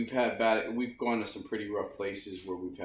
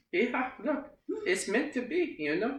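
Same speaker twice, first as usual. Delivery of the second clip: motherly character voice, pitched very high. Doing an impression of mom for the other speaker: impression of mom. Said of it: "that's my mom impression".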